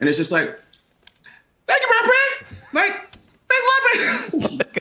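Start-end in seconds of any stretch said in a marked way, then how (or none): 1.7-4.7 voice leaping way up into high falsetto. Retelling his reply to a celebrity who said he was a fan, high falsetto. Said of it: "my voice went to this octave that I've never really, this falsetto".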